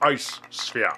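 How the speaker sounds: hushed, breathy put-on starship captain voice. Joking about calling it an ice sphere, in Jean-Luc Picard voice. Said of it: "we can say it like Jean-Luc Picard".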